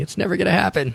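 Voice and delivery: very high, shrill, all-out scream. Imitating a listener screaming at her radio: imitating Christy screaming. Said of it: "She's screaming at her radio going".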